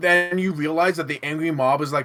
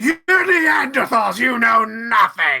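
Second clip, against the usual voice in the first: loud, high-pitched shouting; 8 semitones higher, 6 dB louder than usual. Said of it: "you try shouting this".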